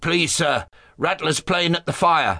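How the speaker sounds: called-out, spiteful tattling tone. Reading a big boy in class calling out to the master, calling out. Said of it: "called out".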